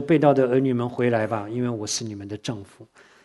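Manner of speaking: ordinary delivery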